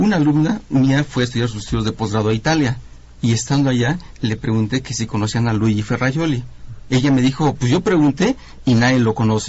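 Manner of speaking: ordinary delivery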